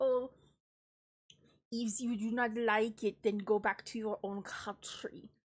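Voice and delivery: slow, bad put-on French accent sliding into Russian. Imitating French officials telling immigrants to go home: attempted French accent. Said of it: "when I try to give them a French accent".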